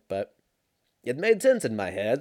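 speaking with a Swedish accent. Admitting a terrible analogy, repeating a phrase, swedish accent. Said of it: "I don't know why I said it like I'm from Sweden".

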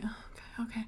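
very soft whisper.

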